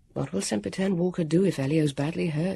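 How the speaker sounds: ordinary delivery, nothing marked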